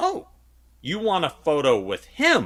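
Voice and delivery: mock affronted, thrown, put-off, high swooping pitch. Retelling a woman asked to take a photo, imitating a put-off tone. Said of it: "she was so put off".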